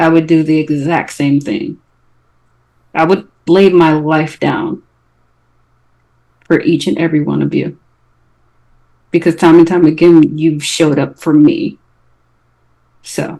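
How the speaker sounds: quiet, soft whisper. Speaking in character to a companion held back after battle: quiet whisper. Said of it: "I quietly just whispered to him".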